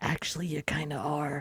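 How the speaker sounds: very quiet hushed aside. Acting out a character who looks around, then answers: lowered voice. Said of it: "lowers his voice and is like".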